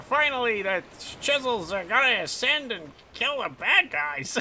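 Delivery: very high, full cartoon villain voice. Describing a game's boss who sounds like Skeletor, doing a Skeletor impression. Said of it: "That was my Skeletor plus final boss vibes impression".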